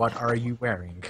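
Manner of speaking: robotic speech-synthesizer voice. Imagining Stephen Hawking working on a sex line: Stephen Hawking voice. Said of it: "Could you imagine Stephen Hawking's working on a sex line?".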